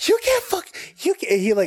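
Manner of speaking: mock very high, angry, heated stuttering outburst. Speaker retells an argument where a man got heated, imitating angry stuttering. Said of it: "He got heated and he started stuttering".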